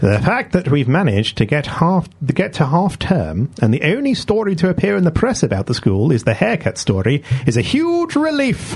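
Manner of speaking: nasal headmaster voice with swooping pitch. Asked to read in a silly voice, the speaker plays a headmaster: nasal headmaster voice. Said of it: "a nasal headmaster".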